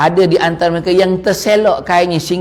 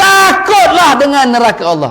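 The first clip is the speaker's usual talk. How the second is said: loud, emphatic, high-pitched raised preaching voice; 8 semitones higher, 5 dB louder than usual. Showing how to speak when telling about hell, loud, raised voice. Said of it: "dikuatkan suara tu".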